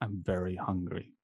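very quiet, barely audible half-whisper. Speaking in character to Auntie during a first date: half-whispering. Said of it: "I'm gonna whisper".

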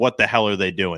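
ordinary talk

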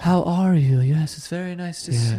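lofty, grand, godlike voice. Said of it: "she talks very slow".

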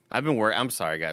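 ordinary talk

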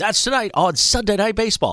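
words drawn out like a ballgame announcer. Recalling old Sunday Night Baseball opens: Jon Miller impression. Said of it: "That's a pretty good John Miller right there".

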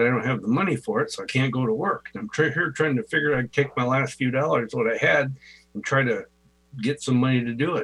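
ordinary talk, nothing marked

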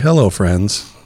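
easygoing, calm, relaxed, low-key tone. Instead of shouting the welcome, the co-host shows how he should open: calm greeting. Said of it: "I should come in calm".

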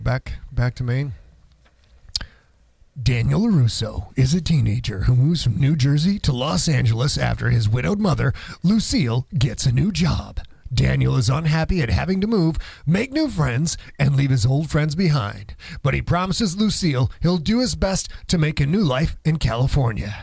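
put-on movie-trailer narrator voiceover voice. Asked to give a movie trailer, doing the movie trailer guy voice. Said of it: "Let's do the movie trailer guy voice".

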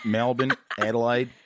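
words said in an Australian accent. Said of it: "wanna learn an Australian accent".

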